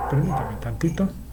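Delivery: unvoiced, hushed speech.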